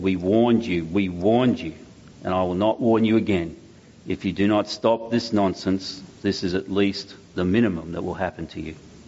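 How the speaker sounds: acted cold, threatening tone. Telling of attackers who slammed a man against a wall, quoting them in a cold voice. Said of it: "in a cold voice they said".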